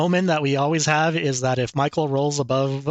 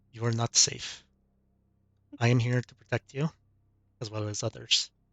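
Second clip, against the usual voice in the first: whispered, much quieter; 3 semitones lower, 7 dB quieter than usual. A woman leans in to the player, telling them to stay close, whispering. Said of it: "leans in and whispers to you".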